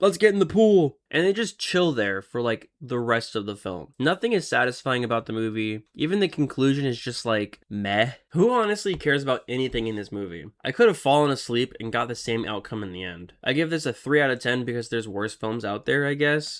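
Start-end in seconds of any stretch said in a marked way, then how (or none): 0.0-1.0 loud, high-pitched yelling. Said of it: "they all just yell out".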